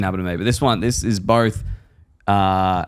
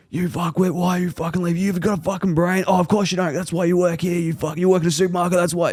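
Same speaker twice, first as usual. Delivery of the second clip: furious, high, screaming, foul-mouthed swearing rant; 8 semitones higher than usual. Retelling how a customer went off at a coworker: imitating a customer screaming. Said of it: "just starts screaming at one of the girls".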